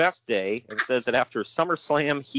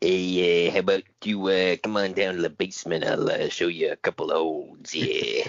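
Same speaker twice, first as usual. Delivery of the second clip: put-on old wrestler voice, lower pitch; 6 semitones lower than usual. Doing an impression of Stu Hart inviting someone to the basement: Stu Hart impression. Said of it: "you got a good Stu impression".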